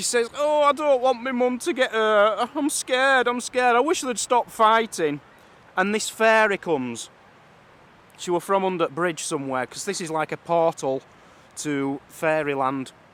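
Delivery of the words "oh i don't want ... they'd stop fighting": tearful put-on girl voice, higher. Telling a folk tale, voicing the scared daughter at the bridge: acting out a crying girl. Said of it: "And she starts crying".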